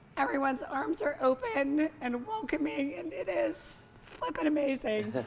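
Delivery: emotional, tearful speech, crying through the words. Speaker tells Jim how welcoming the floor is, crying while talking. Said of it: "I'm sorry, I didn't mean to cry".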